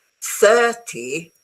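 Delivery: exaggerated heavy stress on thir of thirty. Contrasting thirteen and thirty, exaggerated stress on thir of thirty. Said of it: "the stress is at the beginning".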